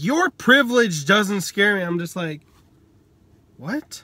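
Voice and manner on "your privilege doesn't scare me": usual speaking voice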